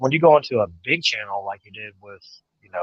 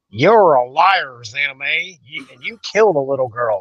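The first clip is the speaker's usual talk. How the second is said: imitated fake country accent; 2 semitones higher than usual. Reading a viewer's hostile comment aloud, in a put-on country accent. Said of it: "I like your country accent".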